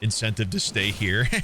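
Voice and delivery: voice cracking and breaking. Telling chat about a perk for year-long subs, voice cracking. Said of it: "my voice cracked".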